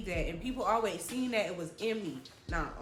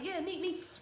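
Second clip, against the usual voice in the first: high-pitched, fast, lecturing delivery. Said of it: "So he just like".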